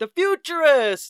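put-on mocking, taunting tone. Retelling a movie scene where inmates taunt a visitor: quoting Clint mocking Tony. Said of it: "all you hear is".

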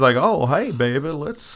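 put-on Southern accent. Mocking a movie vampire who suddenly sounds like he's from the South, in a Southern accent. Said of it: "suddenly he's from the South".

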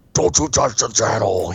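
put-on demonic voice. Retelling how the speaker reacted when the family cut off a violent film: demonic voice. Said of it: "I was probably a demonic voice".

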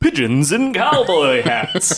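news-announcer delivery, announcer voice. Moving on to the next news item, announcer voice. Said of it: "let me do the announcer voice".

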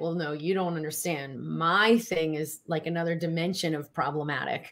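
ordinary talk, nothing marked

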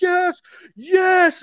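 put-on top-of-the-lungs scream, very high, loud. Retelling the moment the title was announced, reenacting a scream at full lungs. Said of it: "I literally screamed to the top of my lungs".

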